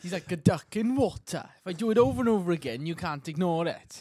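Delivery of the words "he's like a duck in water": bad, awful, fake put-on Welsh accent. Repeating a co-host's line after apologising for it: awful Welsh accent. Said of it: "Will's awful Welsh accent".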